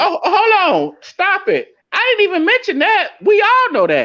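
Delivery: very high-pitched voice, shooting up and swooping. Protesting in a group conversation, voice going up high. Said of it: "Why your voice go up so high?".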